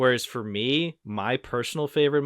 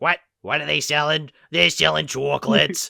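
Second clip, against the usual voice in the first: put-on old woman voice, loud, crackly and creaky; 4 semitones higher, 6 dB louder than usual. Recounting a guy at marching band practice doing his old lady voice. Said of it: "his old lady from the chocolate episode voice".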